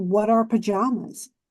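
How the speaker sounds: usual speaking voice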